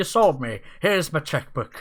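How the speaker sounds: very loud, booming, piratey executive voice. Joking after hearing a book pitch: put-on CEO voice that came out piratey. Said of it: "meant to sound like a, a C E O of some business".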